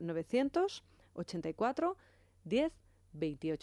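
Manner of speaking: slow, unhurried, deliberate, dictation-paced reading. A radio host repeats a phone number for listeners, reading it more slowly. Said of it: "Voy a repetir el número un poco más despacio".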